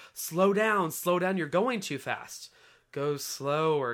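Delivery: ordinary delivery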